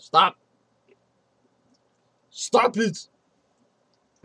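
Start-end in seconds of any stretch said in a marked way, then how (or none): 0.0-3.1 put-on loud, high shout in Austrian-accented action star voice. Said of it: "I just turn into Arnold Schwarzenegger".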